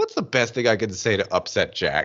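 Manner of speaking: normal talking voice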